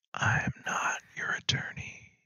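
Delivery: whispered, ghostly voice from beyond. Evoking the lawful evil god of contracts: ghostly voice. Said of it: "You can almost hear a ghostly voice going".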